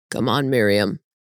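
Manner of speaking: low, rough, gravelly everyday voice. Narrator reads a man turning to his wife; gravelly voice. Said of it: "says in his normal gravelly voice".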